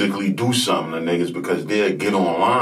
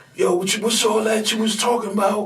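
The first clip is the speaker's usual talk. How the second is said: put-on yelling, higher. Retelling a confrontation outside a door: imitating Hogan yelling. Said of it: "Hogan yelling".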